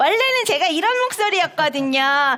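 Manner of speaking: bright, clear, light, lively and cheerful voice. Lecturer demonstrating the voice they originally had: clear, bright, light voice. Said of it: "되게 맑고 밝고 경쾌한데요".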